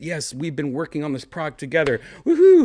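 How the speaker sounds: excited cheering with a huge, loud, high woohoo.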